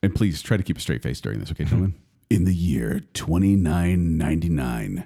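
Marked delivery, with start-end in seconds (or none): 2.3-5.1 dramatic, announcer-style voice. Reading a synopsis aloud to the gentlemen, announcer voice. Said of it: "I'm going to read it in my announcer voice".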